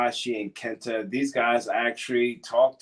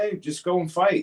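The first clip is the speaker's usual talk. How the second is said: blunt, no-nonsense tone, pitched up; 7 semitones higher than usual. Retelling what the favorite producer would answer: imitating Fit Finley. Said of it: "And he'd be like".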